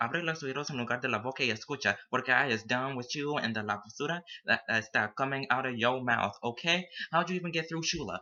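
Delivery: fast, loud, worked-up angry rant in Spanglish.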